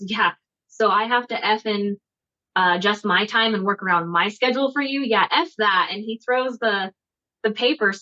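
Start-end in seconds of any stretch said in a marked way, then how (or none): none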